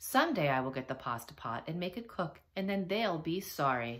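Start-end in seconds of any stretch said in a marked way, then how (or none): none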